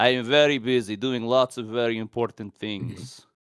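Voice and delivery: put-on convincing, well-done Russian accent. Describing a scene, the speaker voices Red Guardian answering his daughter in a Russian accent. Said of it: "Russian accent is always on".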